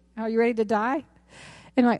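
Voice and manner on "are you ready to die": put-on matter-of-fact pastor voice. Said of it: "Very matter-of-fact lady".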